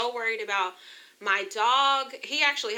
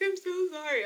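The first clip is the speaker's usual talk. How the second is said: very high, weepy blubbering, put-on crying voice; 10 semitones higher than usual. Retelling apologizing to the dog while sick: imitating own past crying. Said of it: "like, crying, like".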